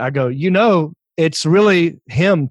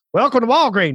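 put-on Southern accent, pitched up; 7 semitones higher than usual. Retelling a lady welcoming a line of people, in a southern accent. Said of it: "a Southern accent".

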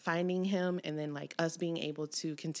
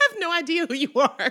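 sassy, very loud, very high, full of attitude; 12 semitones higher, 11 dB louder than usual. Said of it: "kind of attitude-y me".

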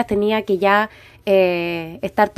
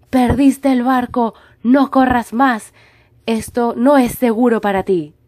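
put-on, very powerful, strong, mighty delivery; 6 semitones higher, 4 dB louder than usual. Retelling what a man said to them: very powerful voice. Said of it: "con una voz muy poderosa".

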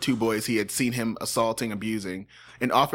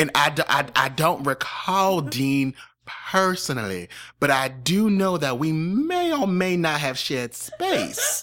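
put-on unhurried, slow, high, drawn-out old senator voice; 5 semitones higher, 3 dB louder than usual. Answering in a mock senate hearing: Jeff Sessions voice. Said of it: "that's exactly the voice I'm doing".

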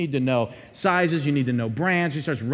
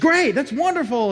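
mock-excited voice, much higher, slower; 11 semitones higher, 4 dB louder than usual. Retelling a sales clerk's reply when he wants to buy his wife an outfit, imitating an excited clerk. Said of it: "getting all excited".

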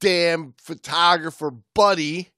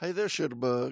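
fake southern American accent, much quieter; 4 semitones lower, 11 dB quieter than usual. Trying out a new nickname in conversation: put-on Southern accent. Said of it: "on your southern accent?".

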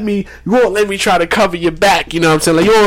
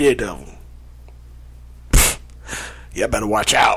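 put-on deep voice, much lower and quieter; 9 semitones lower, 8 dB quieter than usual. Talking up Daredevil to the group, in a deep voice. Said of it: "Deep voice".

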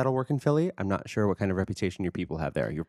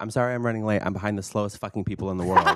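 plain

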